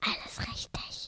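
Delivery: breathy, very quiet, barely-there whisper. Reading a story, a character answers a knock at the door, whispering. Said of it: "hat Mickey geflüstert".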